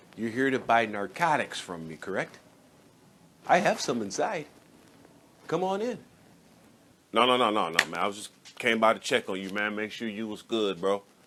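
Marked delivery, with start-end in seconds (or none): 0.2-6.0 put-on, welcoming real estate agent voice. Acting a skit, inviting a visitor inside: real estate voice. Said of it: "you using your real estate voice".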